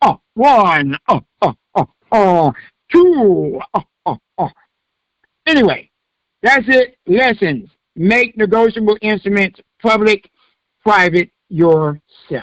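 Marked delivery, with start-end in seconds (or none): 0.0-4.5 slow, drawn-out, stretched-out voice. Joking after a class ends, counting like the Count from Sesame Street. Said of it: "Sound like the count from Sesame Street".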